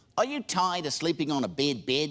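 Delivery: put-on New Zealand accent, radio ad voice. Retelling a radio ad heard while working in new zealand: new zealand accent. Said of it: "But they said".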